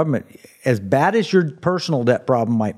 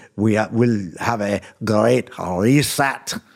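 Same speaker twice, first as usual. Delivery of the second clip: put-on heavy German accent, drawn out very slowly; 4 semitones lower than usual. Retelling what Klaus Schwab would say: Klaus Schwab thick German accent. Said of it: "putting the thick German accent".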